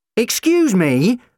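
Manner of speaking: loud shouting, pitched very high. The doctor cuts in while McCavity threatens them: shouted. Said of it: "the doctor shouted".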